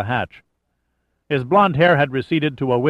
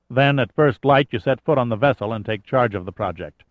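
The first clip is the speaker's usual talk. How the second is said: plain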